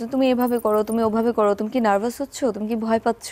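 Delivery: ordinary talk, nothing marked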